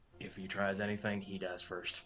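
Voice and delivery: very quiet, hushed murmur under the breath. Leaning over to warn an ally as someone enters: quiet voice. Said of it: "just quietly say".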